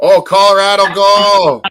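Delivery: full-on yelling. Cheering on Colorado in the middle of the conversation, yelling. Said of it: "Sorry, I'm yelling".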